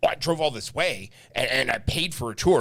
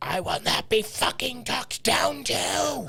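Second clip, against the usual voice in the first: put-on very high, angry, shrill scream, climbing in pitch; 11 semitones higher than usual. Speaker recounts a woman on a tour screaming at them; retelling a scream. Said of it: "she screamed at me".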